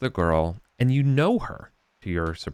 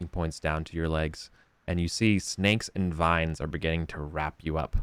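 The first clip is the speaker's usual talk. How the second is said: ordinary talk, nothing marked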